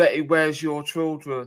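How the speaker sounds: ordinary talk, nothing marked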